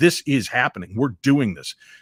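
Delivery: put-on forceful, insistent shouted yell. Retelling screaming at the crew and cast: retelling own screaming. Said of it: "I'm screaming at the crew and cast".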